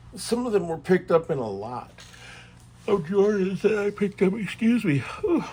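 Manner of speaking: words stretched by a yawn. Explaining what he paid for the cards, yawning while talking. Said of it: "I'm yawning a lot".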